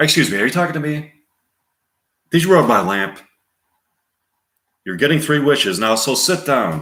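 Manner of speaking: rattled off extremely fast. Performing a line from Aladdin, fast-talking Genie voice. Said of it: "Robin Williams, Genie, speaking quickly".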